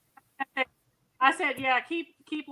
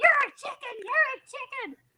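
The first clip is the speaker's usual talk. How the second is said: very high, shrill scream; 14 semitones higher, 4 dB louder than usual. Retelling how she screamed back at a man during a verbal spat, retelling a scream. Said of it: "she starts screaming".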